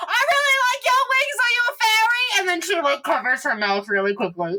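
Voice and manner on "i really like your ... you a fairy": very high, sudden, all-at-once blurt. Narrating the scene as Ina speaks to Murphy about the wings, blurting out. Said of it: "Ina then bursts out".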